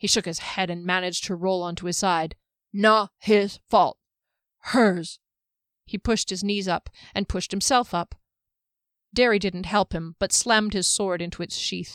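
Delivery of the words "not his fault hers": stiff-jawed voice, louder and slower. A man just freed from a freezing spell forces out words, stiff-jawed after a freeze. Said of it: "where [name] was just coming out of the spell that had frozen him in place. He flexed his hands and feet, and though he could move his jaw, it was stiff and the lips and tongue were not quite ready".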